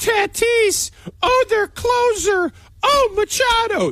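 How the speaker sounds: put-on scared high voice. Debating whether Jell sounded scared, the speaker mimics him, high-pitched and scared. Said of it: "that high-pitched and scared".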